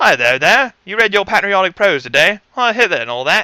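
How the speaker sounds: best-effort British accent, high, loud, rattled off quickly. Offering to try their best british accent, then speaking in a british accent. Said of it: "Could I do my best British accent?".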